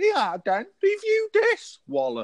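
very high, swooping put-on scally lad jeering voice. Speaker plays a gang of scallies confronting a podcaster, scally lad voice. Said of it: "imagine a gang of scallies like that".

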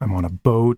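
plain reading voice

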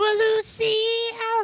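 terrible voice, very high, swooping wildly. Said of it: "That was my [name] impression".

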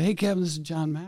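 a little raspy, light rasp in the voice. Retelling a phone call from John Maxwell, imitating John Maxwell's voice. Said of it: "he's got a voice like you".

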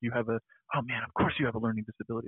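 mock talking-down, pushy, aggressive tone. Retelling what a kid said to them: imitating a condescending, aggressive tone. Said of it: "in a very condescending or sort of aggressive tone".

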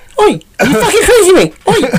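put-on, imitated Liverpool accent. Asked to show your best impression of a liverpool accent: liverpool accent impression. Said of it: "Show us your best impression".

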